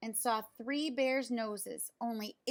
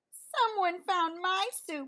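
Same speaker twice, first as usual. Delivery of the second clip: high, squeaky sputter, raised volume; 7 semitones higher, 5 dB louder than usual. Reading the three bears story aloud, Baby Bear finds her soup gone, high squeaky voice. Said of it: "sputtered Baby Bear in her high squeaky voice".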